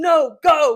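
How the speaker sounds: very loud, booming shout. Retelling a passenger's reply at the drive-thru: imitating someone yelling. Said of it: "yelling at me at this point".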